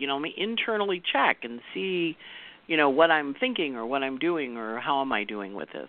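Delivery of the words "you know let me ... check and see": plain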